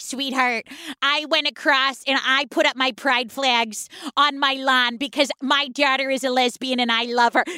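low-pitched Midwestern mom character voice. Praising a woman on TikTok, the speaker imitates Kendra's woke Midwestern mom voice. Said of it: "who does her Midwestern mom".

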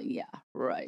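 put-on soft, whispered, laughing, condescending scoff. Recalling people sure they were up to something, imitating condescending laughter. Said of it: "kind of laughing condescendingly".

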